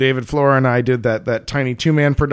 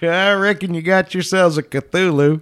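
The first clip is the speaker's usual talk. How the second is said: badly faked Texan accent, pitched up; 5 semitones higher than usual. Speaker shows how people online read the story aloud: bad Texan accent. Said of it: "in bad Texan accents".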